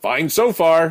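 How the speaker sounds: loud yell, pitched high. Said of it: "he yells back".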